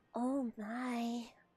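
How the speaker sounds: very quiet cartoon pony voice. Recalling how the speaker answered brony friends, going into a Fluttershy voice. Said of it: "go into my Fluttershy voice and go".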